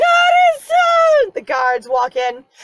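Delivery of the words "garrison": shrill, carrying, high, loud yell. Acting out a character yelling down from a balcony: imitating Nadia yelling down. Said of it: "yelling three or, or four stories down".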